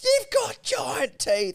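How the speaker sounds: very high, stretched, drawn-out squealing cry, acted out. Telling about feeding fish, quoting Ella, imitating Ella squealing. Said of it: "Ella is squealing".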